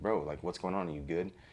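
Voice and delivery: ordinary talk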